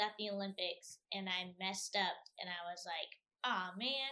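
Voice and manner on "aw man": sarcastic, wry groan. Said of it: "I was being sarcastic".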